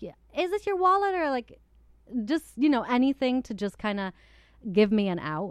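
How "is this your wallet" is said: playful, fun, cute voice pitched very high. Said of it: "she does it in just a, a fun, cute way".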